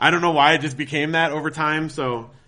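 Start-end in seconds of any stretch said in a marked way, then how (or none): none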